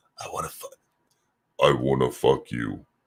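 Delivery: very deep, low, dropped-down voice. Repeating a line a second time, now in a low, deep voice. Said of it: "in a deep voice".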